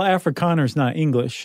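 normal talking voice

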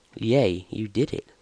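mildly sarcastic cheer. Streaming a game, cheering after getting past a section, a bit sarcastic. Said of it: "bit sarcastic".

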